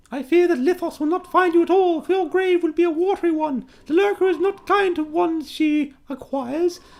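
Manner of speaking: clumsy, badly put-on female voice, very high. Running a game, voicing a woman at an execution in a put-on female voice. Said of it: "I've got to work on my female voices".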